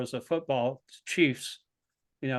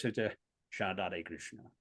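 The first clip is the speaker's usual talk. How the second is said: very low, soft, quiet, hushed murmur; 7 semitones lower, 10 dB quieter than usual. Retelling Prabhupada's reply to a devotee's question, in his very low voice. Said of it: "would just say in a very low voice".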